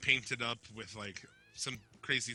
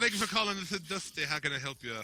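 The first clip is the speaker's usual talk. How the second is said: high, silly put-on voice; 6 semitones higher than usual. Pretending to answer the phone at work: Dusty Rhodes voice. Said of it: "I wanna answer the phone at work like that".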